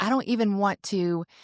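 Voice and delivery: ordinary talk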